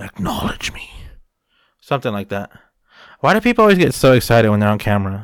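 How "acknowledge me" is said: clumsy, breathy, badly done wrestler-voice whisper. Trying again at a wrestler's catchphrase after calling the voice horrible: horrible Roman Reigns voice. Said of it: "That was a horrible voice".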